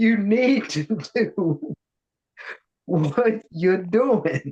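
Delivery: high, slow speech through laughter. Encouraging another speaker to keep doing what they do, laughing while talking. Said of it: "let me stop laughing".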